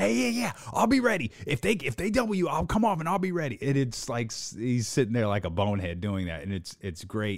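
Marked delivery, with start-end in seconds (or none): 0.0-3.6 very high-pitched, boneheaded hollering. Recounting Steve Kerr's story, the speaker acts out Kerr shouting his reply. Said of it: "And Steve Kerr starts shouting".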